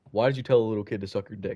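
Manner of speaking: ordinary delivery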